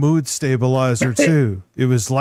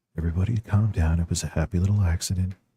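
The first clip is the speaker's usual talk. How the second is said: dropped, quiet voice; 6 semitones lower, 6 dB quieter than usual. Joking that another streamer sounds like Bob Ross: Bob Ross voice. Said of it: "He sounds like a pointy-bearded Bob Ross".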